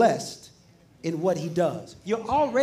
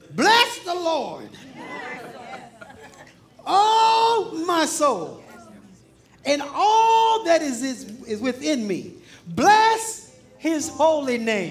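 raised, pitched-up declaiming, "oh" stretched out; 6 semitones higher than usual. Reading Psalm 103 aloud to listeners, with a raised voice. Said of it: "I'm just going to raise my voice a little bit".

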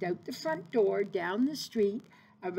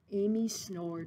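ordinary delivery, nothing marked

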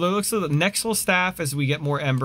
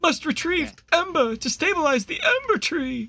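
put-on elderly man voice, pitched very high; 12 semitones higher than usual. A player reads in-game text aloud when asked to, in an old man voice. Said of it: "you have the old man voice, you do that".

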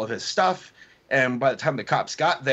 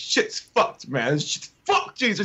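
mock restrained angry outburst, screaming; 5 semitones higher than usual. Retelling a homeless man at Starbucks asked to leave: imitating someone screaming. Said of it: "Starts screaming it".

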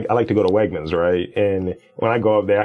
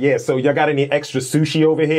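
put-on pushy, aggressive, in-your-face tone, pitched up; 6 semitones higher than usual. Retelling how the speaker deliberately takes up space: retelling an aggressive ask. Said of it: "And I say it really aggressively".

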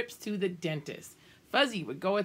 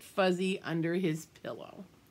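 plain reading voice

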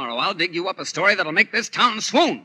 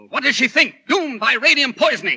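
full-out yelling, rising and high-pitched; 7 semitones higher, 4 dB louder than usual. Arguing with Oliver about a story, shouting. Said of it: "Don't shout at me".

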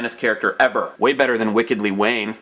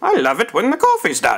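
bad put-on Irish accent, very high, sing-song; 10 semitones higher than usual. Speaker announces an accent attempt, then speaks in an attempted irish accent. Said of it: "my attempt at an Irish accent".

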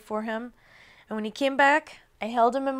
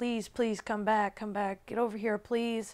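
put-on scared pleading, quieter; 6 dB quieter than usual. Retelling begging him back from a neighbor's yard: retelling a scared plea. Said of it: "Just beckoning him to come back".

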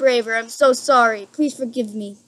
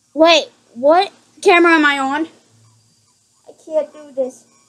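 scared, frightened voice; 3 semitones higher, 3 dB louder than usual. Playing a horror game and checking the cameras, scared. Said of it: "I'm way too scared".

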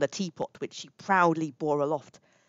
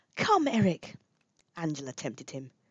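usual speaking voice

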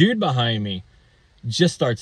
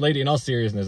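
ordinary talk, nothing marked

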